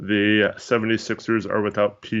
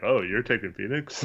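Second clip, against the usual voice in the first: mock-sarcastic, quieter; 4 dB quieter than usual. Quoting the other speaker's earlier reaction back to them, sarcastically.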